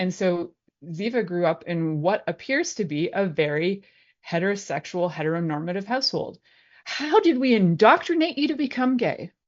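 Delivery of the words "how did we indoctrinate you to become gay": dry, mock-innocent sarcasm, pitched up. Talking about a child growing up in a heteronormative household: sarcastic. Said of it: "The sarcasm runs wild".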